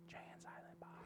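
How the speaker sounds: very quiet, hushed whisper under the breath. Retelling a moment while waiting in line to interview: retelling a whisper. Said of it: "so she can hear me whisper it".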